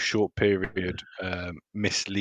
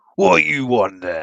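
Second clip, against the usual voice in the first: loud put-on bugbear monster voice; 4 semitones higher, 5 dB louder than usual. Voicing a bugbear who turns to speak to a character: bugbear voice. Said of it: "bugbear in the southwestern corner of the room turns around to Thorn and goes".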